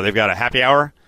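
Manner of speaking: ordinary talk, nothing marked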